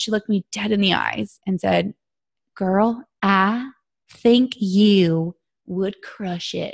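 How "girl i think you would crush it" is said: sweet little voice, very slow and drawn out. Retelling what a woman told her about a Success Club trip, imitating a sweet little voice. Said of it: "in that sweet little voice".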